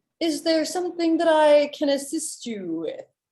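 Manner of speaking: loud, booming, tender voice. Game master voicing a character who notices the party, loud booming yet tender voice. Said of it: "in a very loud, booming voice, but still like a tender voice".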